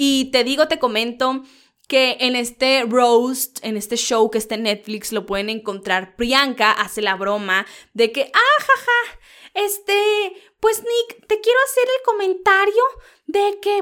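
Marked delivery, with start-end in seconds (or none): 8.3-13.8 very high-pitched put-on voice. Quoting a joke from a roast show on Netflix: Pati Chapoy voice. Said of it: "¿por qué estoy haciendo la voz de Pati Chapoy?".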